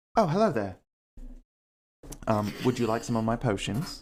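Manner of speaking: put-on very posh, plummy upper-class British accent. Voicing the Jizzard greeting customers at his shop: posh British accent. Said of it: "a very posh British accent".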